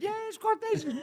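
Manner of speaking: very high-pitched, squeaky voice. Mimicking the other speaker's earlier answer, imitating a high-pitched voice. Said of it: "you went".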